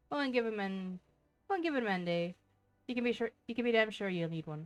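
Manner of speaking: shoddy, bad put-on Irish accent. Reading a game message aloud in character: bad irish accent. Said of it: "shitty Irish accent".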